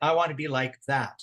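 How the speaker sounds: ordinary talk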